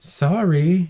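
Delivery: snide, insincere tone. Retelling how a woman answered: imitating a sarcastic sorry. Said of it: "she sarcastically says".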